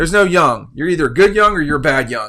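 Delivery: loud screaming yell, acted out. Retelling what a college coach once said to the class: imitating a screaming coach. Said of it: "he started screaming at us".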